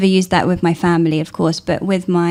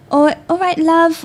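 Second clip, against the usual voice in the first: high, patronizing shop-assistant voice. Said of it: "When someone says".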